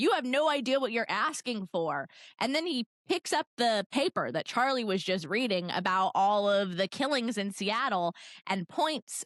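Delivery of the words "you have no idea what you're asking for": mock mad, angry, stern and serious tone. Retelling a book scene where Edward gets mad: imitating Edward angry. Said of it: "Edward gets all mad and is like".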